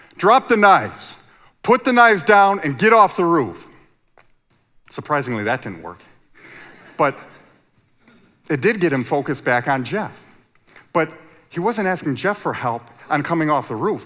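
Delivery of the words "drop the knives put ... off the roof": very loud, raised, put-on police-officer voice. Retell telling a man on a roof with knives what to do, in your best police voice. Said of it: "in my best police voice".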